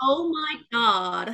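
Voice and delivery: put-on American valley girl accent. Asked to try sounding American, Mean Girls American accent. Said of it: "This was like Mean Girls".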